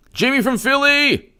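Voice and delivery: loud yell, very high pitch.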